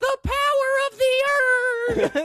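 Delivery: acted, very high, slow, drawn-out yell. Retelling what Paul Bearer yells while holding the urn: imitating Paul Bearer yelling. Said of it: "he just yells".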